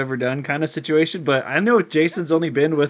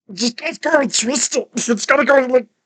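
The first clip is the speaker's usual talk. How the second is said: put-on distorted monster voice, higher pitch; 10 semitones higher, 3 dB louder than usual. Doing an impression of the weird puberty monster when asked to show it. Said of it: "I could do a pretty good one of him".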